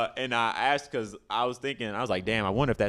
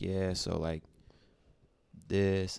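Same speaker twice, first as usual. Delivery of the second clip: put-on comedian-style monotone, much slower; 5 dB quieter than usual. Show how the comedian Jerrod Carmichael did his stand-up, in a Jerrod Carmichael monotone. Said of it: "it was really like real like monotone".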